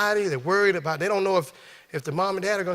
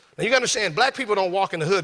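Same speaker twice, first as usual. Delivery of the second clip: ordinary delivery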